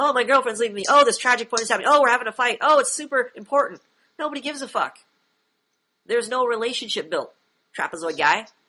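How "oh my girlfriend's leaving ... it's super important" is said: high, frantic, panicky, dramatic wailing. Mocking a new student with no relationships built: imitating frantic yelling. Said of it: "you yelling like a chicken with your head cut off".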